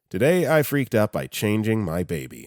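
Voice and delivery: ordinary talk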